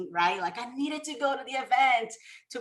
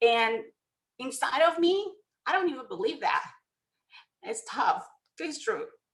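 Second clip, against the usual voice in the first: crying, tearful voice, speaking through tears. Talking about self-image and what people tell her, crying. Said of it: "I didn't mean to cry".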